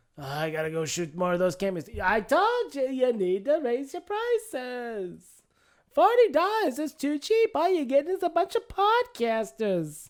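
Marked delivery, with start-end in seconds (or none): 2.0-10.1 put-on old New York lady voice, sing-song.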